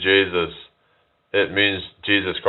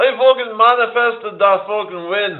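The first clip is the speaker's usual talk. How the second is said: put-on Dublin accent, higher; 14 semitones higher than usual. Doing a mocking impression: Conor McGregor impression. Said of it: "Conor McGregor impression".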